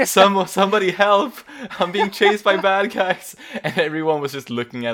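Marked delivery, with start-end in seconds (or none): 0.0-3.4 mock scream, higher, louder and slower. Speaker recalls her riding him down the street, retelling a scream for help. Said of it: "she was screaming like".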